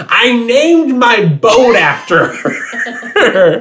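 play-acted, very high, very slow, drawn-out shriek. Recapping a scene as Seth Cohen arrives at the sliding door, Seth Cohen screaming. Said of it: "who immediately just screams".

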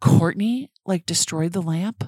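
put-on mother voice, threatening tone.

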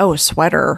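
put-on American accent. Imitating how the other speaker says a word, in an American accent. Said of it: "Sweater in an American accent".

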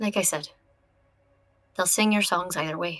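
softly spoken. Fable speaks to Beardrin, quiet. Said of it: "Fable just quietly says".

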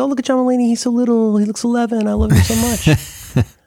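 put-on voice, gushing and high.

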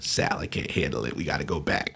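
low, soft, sheepish tone. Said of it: "gets this sheepish look".

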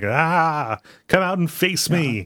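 put-on, very drawn-out, high, challenging scream. Retelling how a villain pulls up outside and screams: imitating Sri Lankan Devil Bird screaming. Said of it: "and he's screaming, like".

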